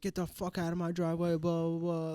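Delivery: put-on shouting, a mildly angry yell. Retelling how a guy yelled at the speaker in a driveway, imitating a man yelling. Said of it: "yelling at me".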